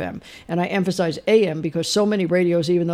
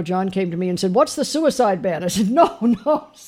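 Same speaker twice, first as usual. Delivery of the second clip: plain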